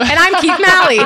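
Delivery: high, loud announcer voice.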